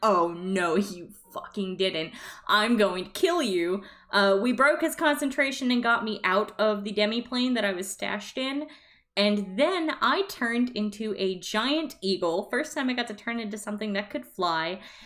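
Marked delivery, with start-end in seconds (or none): 0.0-3.8 put-on furious, angry retort tone. Retelling a game battle where Arrow reacts: imitating furious Arrow. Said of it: "Arrow's freaking pissed".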